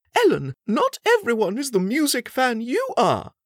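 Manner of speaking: very high-pitched, swooping, sing-song chiding. The Queen corrects Ellen at breakfast, chiding. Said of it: "the Queen chided her".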